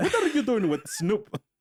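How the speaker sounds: put-on Indian accent. Retelling a remark someone made, in a put-on Indian accent. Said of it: "in my non-English Indian accent".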